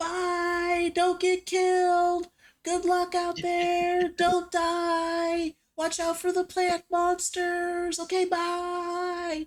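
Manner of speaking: put-on children screaming. A game master voices children in the back as the party heads out: children screaming. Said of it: "various children in the back screaming".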